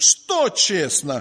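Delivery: что pressed with strong emphasis. Reading a bible verse as marked with stress: stress on что. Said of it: "Я буду читать, как у меня с ударением написано".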